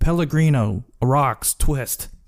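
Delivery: shouted, called out across a distance. Retelling a character running to the table: imitating someone shouting an order. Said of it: "he just shouts out".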